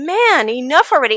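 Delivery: normal talking voice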